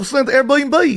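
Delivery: put-on Australian accent. Retelling a story, quoting what a guy said, in an australian accent. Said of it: "That's a good accent".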